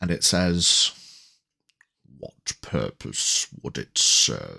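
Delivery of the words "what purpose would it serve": very low, rough growly voice. Narrating an unfamiliar voice heard in the back of someone's mind, deep, growly voice. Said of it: "in a deep, growly voice".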